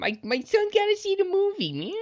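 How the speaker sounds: very high comedian voice, pushed up very high. Imitating a parent who wants their son to see the movie: Adam Sandler voice. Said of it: "that was more Sandler".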